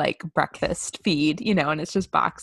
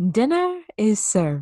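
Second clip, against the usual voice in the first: put-on character voice, high and swooping; 5 semitones higher than usual. Doing the bit shared with a sister, in Mrs. Doubtfire voice. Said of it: "We always do that to each other in the Miss Doubtfire voice".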